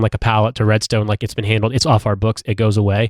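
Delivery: ordinary talk, nothing marked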